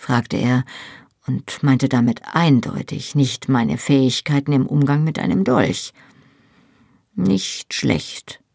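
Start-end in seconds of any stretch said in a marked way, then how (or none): 7.1-8.3 guarded, distrustful, suspicious, wary tone. The narrator answers a man's question: suspicious. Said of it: "antwortete ich argwöhnisch".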